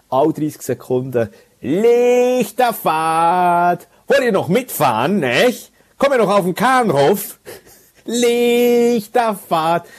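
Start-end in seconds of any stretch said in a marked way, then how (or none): 1.6-9.8 shouting in Hamburg dialect. Imitating a Hamburg caller shouting every thirty seconds, shouted put-on Hamburg dialect. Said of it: "Das ist eben der Dialekt eigentlich so geil. Und vielleicht mache ich ihn komplett falsch nachher. ... Aber dann wird in einer Lautstärke".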